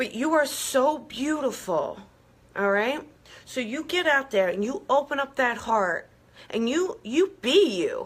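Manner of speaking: getting emotional, choked up, voice catching. Encouraging listeners to trust themselves and shine, getting emotional. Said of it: "even I'm getting emotional".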